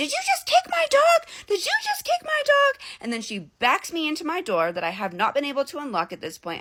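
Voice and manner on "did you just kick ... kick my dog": mock very high shrieked screaming. Retelling a neighbor's accusation about her dog: imitating someone screaming. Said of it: "she starts screaming at me".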